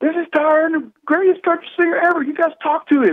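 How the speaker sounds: very high, all-out, lung-busting scream. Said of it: "screams at the top of his lungs".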